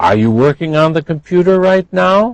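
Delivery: pitch lifting upward at the end on now. Intonation example of a yes-no question, rising at the end on now. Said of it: "You should have heard that that was rising".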